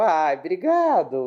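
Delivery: mocking, sarcastic, slow and drawn out.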